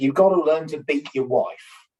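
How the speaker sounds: ordinary talk, nothing marked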